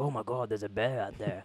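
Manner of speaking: put-on Australian pirate voice. Acting out a camping trip scare: Australian pirate accent. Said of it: "what kind of accent was that?".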